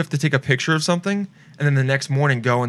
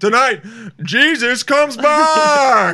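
put-on TV announcer voice, higher and louder; 10 semitones higher, 5 dB louder than usual. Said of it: "my voice of God is always the S N L voice".

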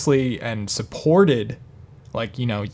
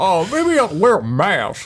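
very drawn-out, slow, swooping put-on voice; 8 semitones higher, 4 dB louder than usual. Impersonating someone reacting to falling poll numbers: put-on impression voice. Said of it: "That's my best impression, by the way".

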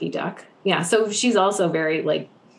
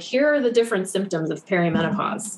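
ordinary delivery

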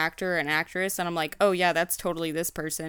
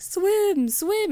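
put-on dumb voice, much higher; 13 semitones higher, 4 dB louder than usual. Retelling a film scene where Howard dances as the walrus nearly drowns; dumb giddy Howard voice. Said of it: "in the dumbest fucking voice I've ever heard".

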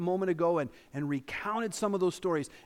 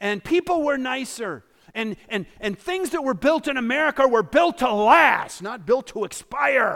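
put-on grumpy old man voice, higher and louder; 6 semitones higher, 10 dB louder than usual. Imitating churchgoers reminiscing about the good old days: imitating a grumpy old man. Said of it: "Do I sound like a grumpy old man?".

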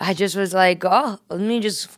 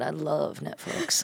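put-on sleazy, creepy Southern accent, rough and creaky; 4 semitones lower, 9 dB quieter than usual. Retelling own reply to him about Netflix: imitating a creepy Southern guy. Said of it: "you sound like a creepy guy in the South".

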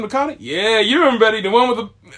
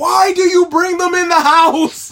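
long, high, stretched-out holler; 8 semitones higher, 4 dB louder than usual. Describing what you feel like yelling at people you hang with: acting out a yell. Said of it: "you really want to be just yelling like".

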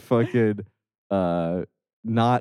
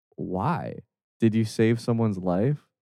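usual speaking voice

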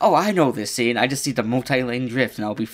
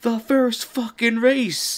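very high, shrill, stretched-out, drawn-out yell; 12 semitones higher than usual. Recounting yelling back at the other guy across the room, retelling a yell back. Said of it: "So I just yell back".

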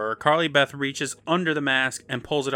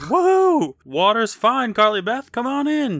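put-on cheer, very high, swooping, drawn out; 10 semitones higher, 5 dB louder than usual. Recapping a story, voicing what the masks should say, mock-cheerful and fun. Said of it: "Sound like you're having some fun".

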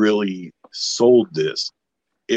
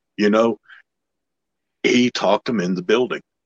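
usual speaking voice

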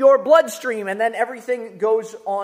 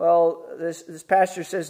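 ordinary talk

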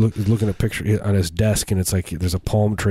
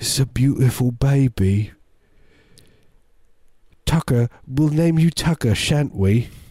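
clumsy, fake British accent, pitched high; 6 semitones higher than usual. Performing a scene after a break, in a bad British accent. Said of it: "No matter how much I do this accent in the mirror".

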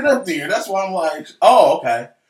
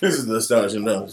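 grave, very low, serious newsmagazine anchor delivery; 9 semitones lower, 7 dB quieter than usual. Answering a request for a serious voice: serious 20/20 voice. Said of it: "You can do the serious twenty twenty voice".

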